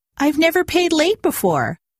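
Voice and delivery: very high, spluttering, sputtering delivery. Protesting to a woman who refuses to waive late fees: sputtering. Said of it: "I was sputtering now".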